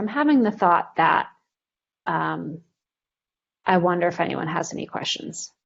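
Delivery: ordinary delivery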